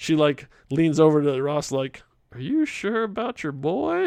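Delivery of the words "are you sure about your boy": sly, hushed, pitched-up sotto voce aside. Retelling a film scene where Spar leans over to Ross: imitating Spar's sotto voce aside. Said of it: ""Sotto voce."".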